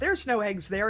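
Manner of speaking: mock little girl voice, high and loud yelling. Retelling what the girl child yells during a chicken game: imitating a child yelling. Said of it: "the girl child yells".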